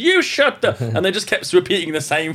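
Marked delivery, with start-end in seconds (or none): 0.0-0.8 put-on very high, thick New York accent shouting. Retelling two New York taxi drivers arguing in the street: thick New York accent shouting. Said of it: "really thick New York accents".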